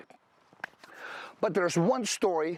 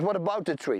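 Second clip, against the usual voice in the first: plain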